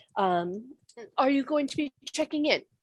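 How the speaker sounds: stately, regal, very proper and formal delivery. Voicing a character who asks the visitors about checking in: regal, very formal voice. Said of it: "the voice that comes through it is kind of regal and very, very formal".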